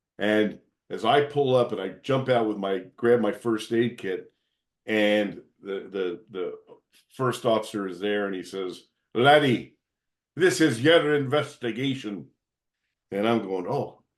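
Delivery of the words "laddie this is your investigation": strong, pronounced Scottish brogue. Retelling arriving at a scene, the speaker quotes the first officer: Scottish brogue. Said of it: "had a very pronounced Scottish brogue".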